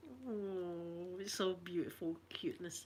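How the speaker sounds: very quiet, soft, deeply moved, emotional, drawn-out oh. Speaker talking about hearing a future grandchild's heartbeat; emotional. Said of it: "I'm emotional now".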